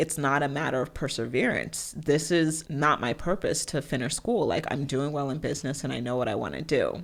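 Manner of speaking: ordinary delivery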